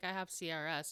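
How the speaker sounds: mock flat delivery. Retelling a girl's answer to the speaker's sister, imitating a deadpan delivery. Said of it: "she said this so deadpan".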